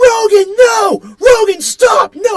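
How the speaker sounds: very high, very slow, drawn-out top-of-lungs yell. Retelling shouting during an animal fight, reenacting a top-of-lungs yell. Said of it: "at the top of my lungs".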